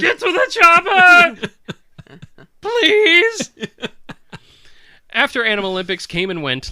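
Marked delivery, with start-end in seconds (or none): 0.0-3.5 very high, very loud, very slow booming bellow. Answering a remark by playing up the Arnold Schwarzenegger impression. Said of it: "sound like a prepubescent Arnold Schwarzenegger".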